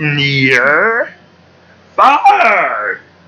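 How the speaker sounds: puppet monster voice, drawn out far. Asked whether he is doing Yoda, the speaker answers with a Grover voice. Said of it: "Grover, you are".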